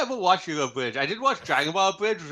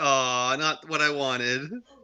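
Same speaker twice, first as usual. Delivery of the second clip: mock glum, defeated, let-down tone. During a dice game, mimicking a player's reaction to a roll: imitating Joey's defeated voice. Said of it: "That sound of defeat in Joey's voice".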